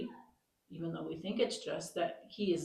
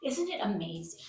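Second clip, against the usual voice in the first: plain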